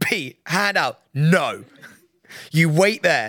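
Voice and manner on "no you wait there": imitated old teacher voice. Retelling a friend turning away a teenage boy, imitating Pete as an old teacher. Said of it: "like an old teacher".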